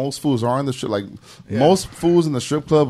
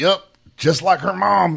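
put-on slow, rough, creaky old drunk voice, pitched up; 7 semitones higher, 3 dB louder than usual. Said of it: "He talked like Larry the Cable Guy".

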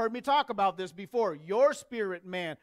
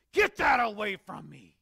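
mock furious, spitting, angry cursing outburst. Recounting a man cursing and kicking at the cross, acting out his anger. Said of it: "You could hear it in his voice".

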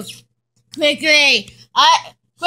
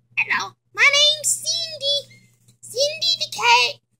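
high, pitched-up animatronic cat voice; 8 semitones higher, 5 dB quieter than usual. Voicing an evil animatronic cat in a toy play scene: Cindy voice. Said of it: "evil animatronic, Cindy".

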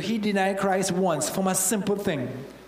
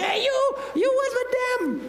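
put-on very high, thin, squeaky little-girl voice. Retelling the girl who confronts Peter, little spiny girl voice. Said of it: "with a little spiny voice coming".

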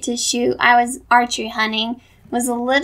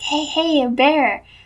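soft whispered speech; 3 semitones higher than usual. Retelling trying to alert someone about a bear: retelling a whisper. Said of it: "trying to, like, whisper to her".

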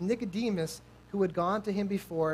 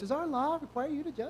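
play-acted, high, scornful, jeering taunt; 8 semitones higher than usual. Speaker imagines how they might answer Nicodemus: imitating a mocking voice. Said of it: "with like that mocking voice".

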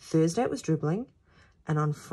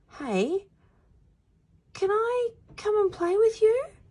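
calling out very high, pitch rising throughout; 4 dB louder than usual. A boy calls over to children playing, asking to join them. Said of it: "he called".

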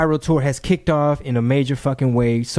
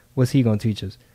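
put-on whisper, lower; 3 semitones lower than usual. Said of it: "Luda's mom leans over and whispers to me".

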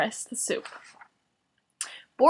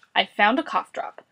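plain

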